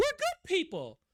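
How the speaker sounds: tone climbing way up through good people. Imitating people who say they're good people: imitating them, pitch rising higher. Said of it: "they have like an inflection in their voice, like the tone goes higher".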